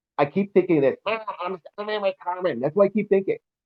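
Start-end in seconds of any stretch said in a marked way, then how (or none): 1.1-2.6 weaselly little whiny voice. Imitating a daughter who complains about having no powers, in a whiny, weaselly voice. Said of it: "she has this weaselly, whiny voice".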